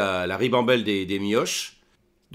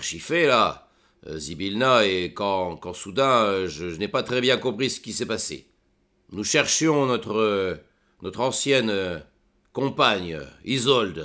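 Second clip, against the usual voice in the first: put-on voice of an aged dwarf; 2 semitones lower than usual. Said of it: "vous pouvez le dire, je suis un vieux nain".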